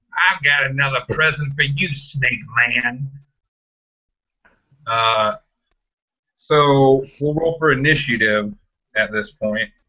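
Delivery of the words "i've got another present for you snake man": sinister, menacing, cackling delivery. Voicing a character offering Snake Man another present, cackling menacingly. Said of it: "He just kinda cackles menacingly".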